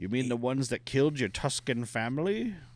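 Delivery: gunslinger outlaw cowboy voice. Retelling a scene to co-hosts, the speaker does a Cad Bane impression. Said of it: "I'm doing Bane again".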